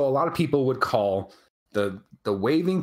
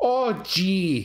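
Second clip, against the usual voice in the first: put-on thick, heavy regional Wisconsin accent, pitched up; 6 semitones higher than usual. Discussing accents in Wisconsin, speaker demonstrates a heavy Wisconsin accent. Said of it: "So there's not a lot of people who say".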